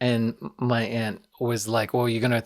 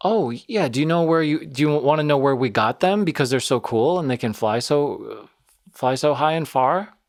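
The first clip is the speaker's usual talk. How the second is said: sweetly sarcastic, satirical, over-nice gushing; 3 semitones higher, 4 dB louder than usual. Retelling an aunt's reply to a concerned person, imitating mock-sweet satirical tone. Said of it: "Satirically satirically projecting the good intention".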